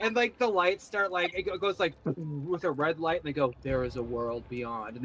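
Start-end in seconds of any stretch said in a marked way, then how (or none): 3.6-5.0 low-pitched, spooky intoning voice. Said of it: "they get kind of spooky".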